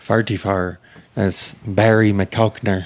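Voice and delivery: put-on Irish accent. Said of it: "give us your Irish accent there".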